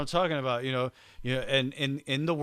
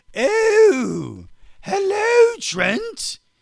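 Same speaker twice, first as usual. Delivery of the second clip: very high, very loud, grand, shrill sing-song, stretched "oh"; 9 dB louder than usual. Speaker shows a co-host the voice imagined for the painting: Mona Lisa voice. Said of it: "Can I do the rest of the show with that voice?".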